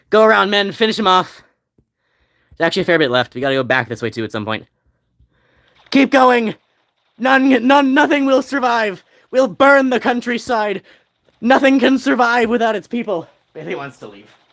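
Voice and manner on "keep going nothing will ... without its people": deliberate, slow, drawn-out rousing yell. Speaker commanding their men to keep going in battle, yelling. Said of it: "I'm yelling too much".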